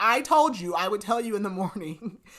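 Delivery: mock-snapping tone. Summarizing a story, acting out one character snapping at another: retelling a snap. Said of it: "kind of snaps at him".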